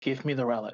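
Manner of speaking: whispering. Voicing Luna asking for the relic in character, whispering. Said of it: "Luna whispers again".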